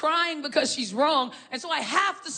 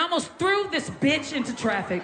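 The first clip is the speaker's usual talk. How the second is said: normal talking voice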